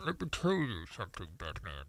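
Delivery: put-on very deep, very soft, barely audible elderly villain voice. Joking with the others: Old Man Bane voice. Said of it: "Old Man Bane".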